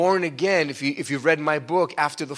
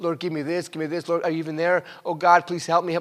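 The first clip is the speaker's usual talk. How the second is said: mock, put-on pleading, begging voice. Preacher shows how not to pray, mock begging prayer. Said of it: "Don't beg".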